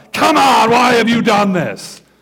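harsh, angry, accusatory voice. Showing how the line would not sound: mock angry tone. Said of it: "this is not an angry tone".

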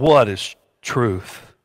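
sarcastic, jabbing tone. Reading aloud Pilate's question to Jesus: sarcastic Pilate voice. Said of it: "In a sarcastic voice".

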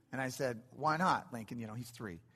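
plain

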